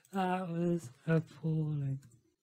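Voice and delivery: talking through laughter. Reacting to how badly the trading strategy did, laughing while talking. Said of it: "I can't stop laughing".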